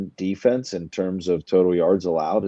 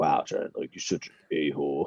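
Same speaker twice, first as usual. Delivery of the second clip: deep, breathy, low near-whisper in a man's voice; 5 semitones lower, 8 dB quieter than usual. Speaker imitates how a man will react on hearing this, imitating him in a low voice. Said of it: "I gave him a low voice again".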